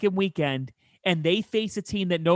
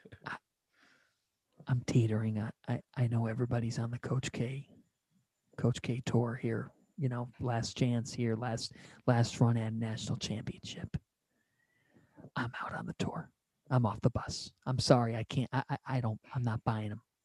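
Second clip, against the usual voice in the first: hushed voice, lower and quieter; 7 semitones lower, 10 dB quieter than usual. Sharing a take close to the microphone: speaking quietly. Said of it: "I'm kinda saying it quietly".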